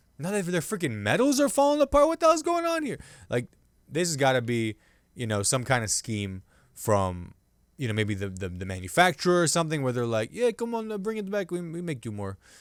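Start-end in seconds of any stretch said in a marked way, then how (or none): 10.4-12.4 put-on French accent, soft and high. Speaker voices a manufacturer, in a french accent. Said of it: "This is a French accent".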